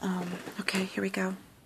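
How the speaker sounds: soft, unvoiced whisper, said as an aside.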